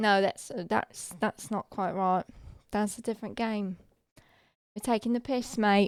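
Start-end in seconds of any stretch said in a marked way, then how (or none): 4.7-5.9 put-on British accent. Playing a game, the speaker slips back into a British accent. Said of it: "British Gem is back in it".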